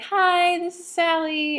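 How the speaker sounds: put-on high-pitched, slow, drawled Southern accent. A podcast host acts out how her usual co-host greets listeners: imitating Sallie's Southern accent. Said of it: "or something more southern, cool sounding".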